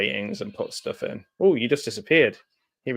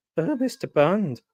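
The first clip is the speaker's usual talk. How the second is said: pitched-up lady voice; 8 semitones higher than usual. Recalling an audiobook where the reader voices female parts too: Dan Stevens doing a lady voice. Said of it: "doing a lady voice".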